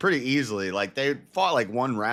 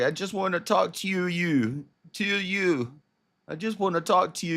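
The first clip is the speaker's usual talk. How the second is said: put-on crying, tearful voice, higher; 9 semitones higher than usual. Retelling what a crying woman said to the police: imitating someone crying. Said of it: "She's, she's crying".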